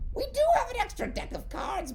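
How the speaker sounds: very high, squeaky, sing-song goblin voice. Narrating a scene, voicing one of the goblins behind a character, in a goblin voice. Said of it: "You hear one of the goblins".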